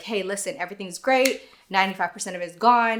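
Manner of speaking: ordinary talk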